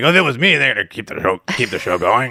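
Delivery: villain voice, heavy gravel. Retelling what Vince McMahon said after a wrestler died: Vince McMahon impression. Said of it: "That was a good impression".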